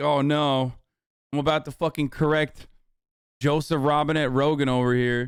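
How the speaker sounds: usual speaking voice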